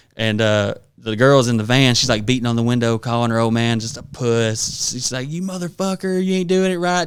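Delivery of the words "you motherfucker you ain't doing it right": furious, angry cussing, pitched up. Retelling a girl in a van cussing out her old man: mock-angry cussing. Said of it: "just cussing him".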